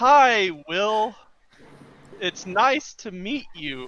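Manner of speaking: every word drawn out deliberately. Greeting another character in a tabletop game, speaking really slowly.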